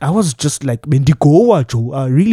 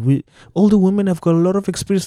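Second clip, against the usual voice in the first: plain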